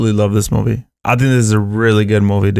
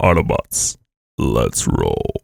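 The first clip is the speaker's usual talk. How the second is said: horrible, breathy put-on voice, badly whispered, half breath; 14 semitones lower, 5 dB quieter than usual. Opening a movie talk with a bad Optimus Prime impression. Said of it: "No, that was horrible".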